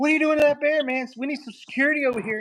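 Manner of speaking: mock playful teasing, very high-pitched. Retelling what he said to a man on screen with a bear puppet, retelling a teasing jab. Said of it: "I was teasing him".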